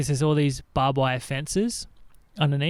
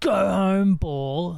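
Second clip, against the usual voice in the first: put-on seven-year-old, high, childish shouting scream; 5 semitones higher than usual. Retelling screaming at a golf ball as a kid: imitating own childhood scream. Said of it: "So I did the same thing as a kid".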